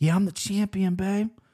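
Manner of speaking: smooth, suave, slick voice. Picking a fight winner, then doing an Usman impression: smooth. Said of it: "This is my Usman impression".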